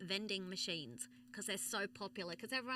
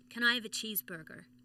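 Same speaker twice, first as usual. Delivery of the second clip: loud, attempted put-on American accent; 5 dB louder than usual. Asked to do an American accent, put-on American accent. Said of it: "do an American accent".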